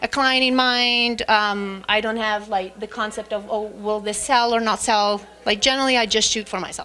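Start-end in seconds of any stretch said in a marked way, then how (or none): none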